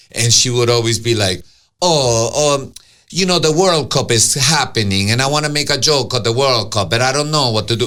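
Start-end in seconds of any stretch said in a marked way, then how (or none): 1.8-7.9 put-on Argentinian accent laid on heavy. Retelling what a friend would always say: imitating thick Argentinian accent. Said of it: "Gorgeous, thick Argentinian accent".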